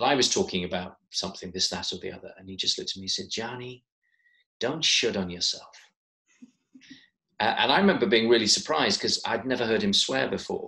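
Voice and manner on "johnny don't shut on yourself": dreadful, unconvincing put-on American accent. Retelling something a man once said to him: dreadful american accent. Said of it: "I'm now going to attempt a, a dreadful American accent".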